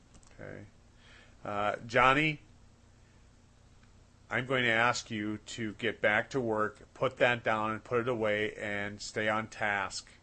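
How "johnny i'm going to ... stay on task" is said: clear, direct, firm, authoritative teacher voice. Demonstrating the next step, addressing someone by name: clear, direct, authoritative voice. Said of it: "using clear, direct, authoritative voice, no nonsense tone".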